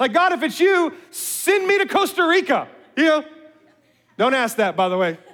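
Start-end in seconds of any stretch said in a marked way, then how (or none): 0.1-2.7 dry, sarcastic, pitched-up delivery. Speaker wonders about being sarcastic with God and tries it, sarcastic prayer. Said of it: "be kind of sarcastic with God".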